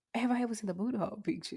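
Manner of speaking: hushed whisper. Answering a question from the other speaker, whispering. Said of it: "Why you whispering?".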